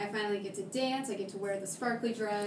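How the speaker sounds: ordinary talk, nothing marked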